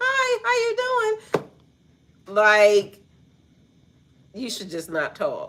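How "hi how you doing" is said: very high tiny falsetto voice on a big man. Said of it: "his voice like".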